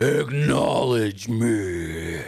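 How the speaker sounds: put-on raspy voice with weight and gravitas. Act out Roman looking around at the crowd, in a raspier Roman Reigns voice with gravitas. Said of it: "trying to be more with the gravitas in his voice".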